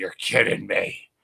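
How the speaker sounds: groggy, slow, croaky groaned disbelief.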